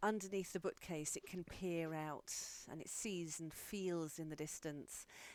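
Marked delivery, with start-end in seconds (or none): none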